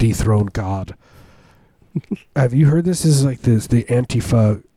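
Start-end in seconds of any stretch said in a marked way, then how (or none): 0.0-1.0 mock muttering under the breath. Recounting a man at Lowe's, the speaker imitates his mutter under his breath. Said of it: "He just muttered under his breath".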